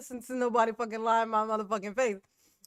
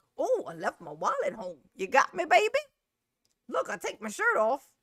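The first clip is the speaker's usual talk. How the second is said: animated, lively caller voice with swinging pitch; 3 semitones higher than usual. Teasing a caller on the show: imitating David. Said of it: "now that sounds more like this guy. That's David".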